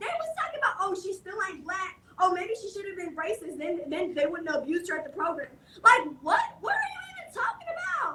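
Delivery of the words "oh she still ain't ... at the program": ordinary delivery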